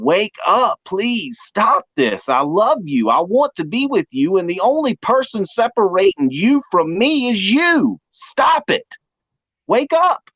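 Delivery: harsh, stern, urgent, very high and slow. Acting out the Father shaking a child home drunk: acting out harsher, sterner pleading. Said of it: "my words are gonna get a little harsher, a little more sterner".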